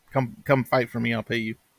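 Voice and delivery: ordinary talk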